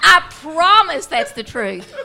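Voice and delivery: loud, laughing, tearful delivery.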